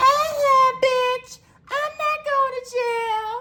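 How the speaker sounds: squeaky, very high, very slow, drawn-out defiant voice. Act out exactly how Fraudulent answered the cop, in Fraudulent's high-pitched voice. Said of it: "I'm gonna do it exactly how Fraudulent fucking did this shit".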